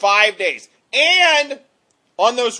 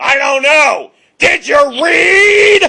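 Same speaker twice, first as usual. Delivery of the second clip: high screaming shout, drawn out and stretched; 7 semitones higher, 8 dB louder than usual. Retelling a man's reply to a student's question, imitating Mr. Kreese screaming. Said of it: "he's basically just screaming at you".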